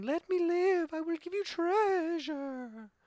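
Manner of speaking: very high, slow, drawn-out screeching crone voice. Narrating a tabletop game, voicing the hag next to Sven: shrieking hag. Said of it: "she's shrieking".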